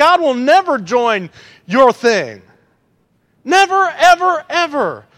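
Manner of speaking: high, swooping, drawn-out preacher-style shout. Addressing a crowd with a little baby present, yelling. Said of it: "I'm yelling at this little baby".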